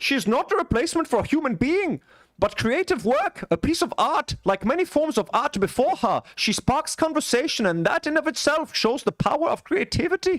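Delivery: put-on Dutch accent. Reading an AI actress creator's statement aloud to folks: put-on Dutch accent. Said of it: "it's a Dutch accent, folks".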